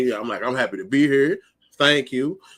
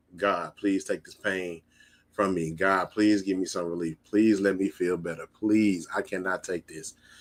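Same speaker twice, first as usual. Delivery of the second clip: desperate pleading tone, lower and quieter; 4 semitones lower, 6 dB quieter than usual. Retelling praying in pain on the drive home: retelling a desperate prayer. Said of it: "I am literally praying".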